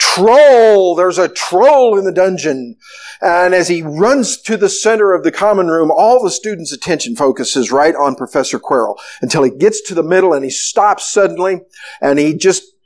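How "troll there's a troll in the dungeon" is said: ordinary talk, nothing marked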